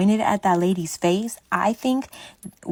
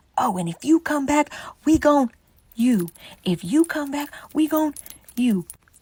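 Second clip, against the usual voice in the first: high, loud screaming yell; 7 semitones higher than usual. Retelling a threat screamed at them while walking out: imitating Big Bertha screaming. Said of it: "we hear Big Bertha start screaming about".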